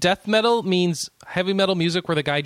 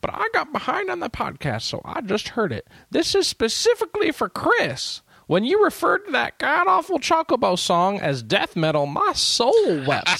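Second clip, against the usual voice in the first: put-on small elderly voice, pitched up; 8 semitones higher than usual. On a podcast, reading a listener's message aloud to chris: old, tiny voice. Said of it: "read them in old, tiny voice".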